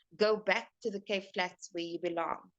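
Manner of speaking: ordinary delivery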